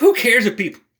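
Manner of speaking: choking mid-sentence, high choked sputter. A man making videos at home, addressing viewers, choking on his spit. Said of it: "choking on my spit".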